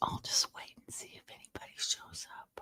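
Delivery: soft unvoiced whisper. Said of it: "I'm whispering because I don't want to wake anybody up".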